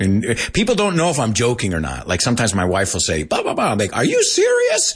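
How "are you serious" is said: very high-pitched, squeaky voice. Retelling his usual reply to his wife, in a high-pitched voice. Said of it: "I'll say it in that high-pitched voice".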